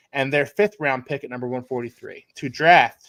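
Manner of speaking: ordinary talk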